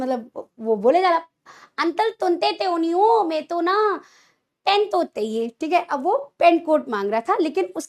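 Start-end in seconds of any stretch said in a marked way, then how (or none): 1.8-5.5 put-on lisping baby talk, mimicking a child's speech. Retelling what a child said to an uncle, imitating a child's lisping talk. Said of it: "तोतली भाषा में बोल रहा है".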